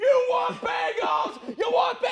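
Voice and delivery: very high, loud, drawn-out hollering scream. Retelling a sign guy heard at a traffic light: imitating a man screaming. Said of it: "I start hearing this guy screaming".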